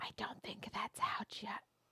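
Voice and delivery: soft, unvoiced, whispered aside. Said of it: "he leans over and he goes".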